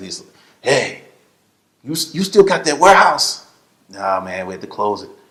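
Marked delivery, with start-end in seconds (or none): 0.6-3.4 put-on heavy Spanish accent, laid on thick, pitched up. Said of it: "he had that thick accent".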